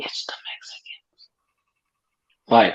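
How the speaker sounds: hushed, confiding, leaned-in whisper. Retelling what a lady at a school board meeting whispered: imitating someone whispering. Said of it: "And she whispered".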